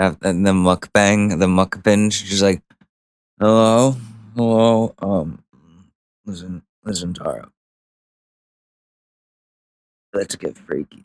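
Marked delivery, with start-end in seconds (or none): 3.4-10.9 put-on tipsy, drunk-sounding talk. Acting out drunk dialing an old high school girlfriend: pretend drunk. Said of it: "just drunk dialer".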